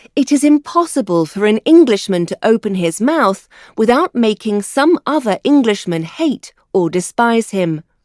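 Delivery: ordinary delivery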